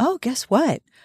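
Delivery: casual, offhand, matter-of-fact, a touch high. A girl eating with her family begins an announcement; matter-of-fact. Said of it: "Christine said very matter-of-factly".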